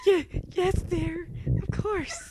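very high, frightened, terrified little voice. Answering another character during a game, sounding terrified. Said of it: "You sound so terrified".

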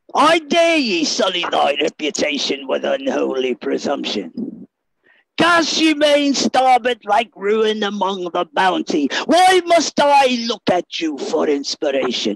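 low, swooping, swinging pirate character voice. Performing a ye olde spoken word piece, in a Captain Barbossa voice. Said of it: "I do it in the voice of Captain Barbossa".

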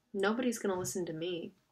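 ordinary delivery

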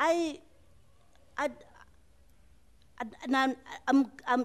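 high, halting stutter with long pauses.

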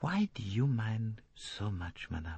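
hushed, very gentle, soft, confiding, appealing tone. A man leans forward toward a woman and questions her, very gently. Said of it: "He said very gently".

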